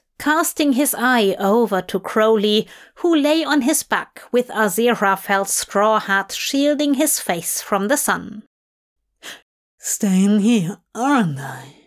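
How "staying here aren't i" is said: put-on mumbled, words slightly slurred. After one cup of wine, he mumbles to his companion, slightly slurred. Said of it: "He mumbled, slightly slurring his words".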